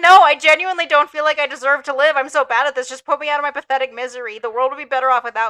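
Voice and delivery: put-on weepy, tearful, crying, hopeless lament. Retelling being found crying after a failed boss fight: imitating own past crying. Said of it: "and I cried".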